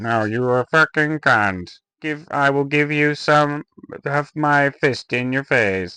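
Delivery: put-on angry robotic voice. Imagining Stephen Hawking losing his temper, mock-angry Stephen Hawking impression. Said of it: "Imagine if Stephen Hawking lost his temper".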